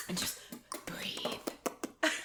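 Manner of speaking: ASMR-style voice. Greeting a guest of the show, the host speaks in an ASMR voice. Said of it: "Doing that A S M R voice".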